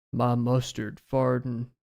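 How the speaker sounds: computer-read cowboy narration voice. Reading a chat message aloud: TikTok text-to-speech Western voice. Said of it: "I read that with the TikTok text-to-speech, like, Western voice".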